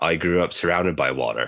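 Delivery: put-on deadpan delivery. Retelling a show's reply to a complaint about stolen water: imitating Boba Fett's deadpan. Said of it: "looks at him deadpan and says".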